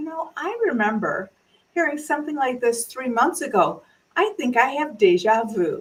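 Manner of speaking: dry, sardonic, sarcastic little barb. Retelling a comment to coworkers that popped their hope: sarcastic quip. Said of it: "threw that little sarcastic barb forward".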